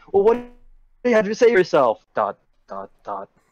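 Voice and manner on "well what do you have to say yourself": high, fast, mock dramatic delivery. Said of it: "she's like".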